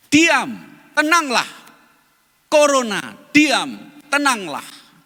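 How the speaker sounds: stern, rebuking tone with swooping pitch. Retelling how a preacher rebuked the pandemic: imitating a rebuking command. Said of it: "meniru bagaimana Yesus menghardik topan".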